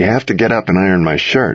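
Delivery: ordinary delivery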